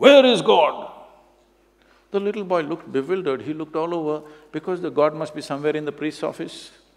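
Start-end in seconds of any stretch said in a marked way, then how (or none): 0.0-0.9 booming, very loud, high-pitched voice. Retelling a priest stopping mid-stride to question a little boy; booming voice. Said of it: "with a booming voice he said".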